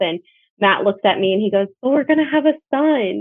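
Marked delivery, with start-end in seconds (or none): 1.8-3.2 play-acted overjoyed, thrilled, high, ecstatic voice. Retelling how Matt looked at her and reacted: imitating Matt's ecstatic tone. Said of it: "And he was so ecstatic".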